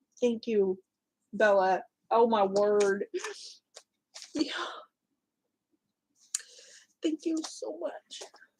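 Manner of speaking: choked up, teary, fighting back tears. Thanking someone for a gift that overwhelms the speaker, fighting back tears. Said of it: "Sorry, I'm trying to cry".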